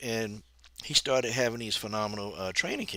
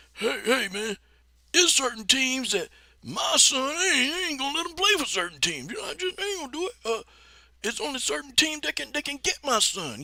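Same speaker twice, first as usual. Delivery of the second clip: very high-pitched put-on coach voice; 5 dB louder than usual. Retelling a coach's statement about his son, Coach Prime voice. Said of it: "Coach Prime made those statements".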